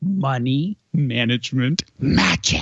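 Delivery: dramatic, showman-style word-by-word emphasis. A guest on Mornings with Sue and Andy shows how to say the phrase, emphasizing each word. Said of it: "it's more like this. / You're emphasizing the words".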